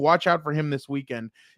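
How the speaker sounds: ordinary delivery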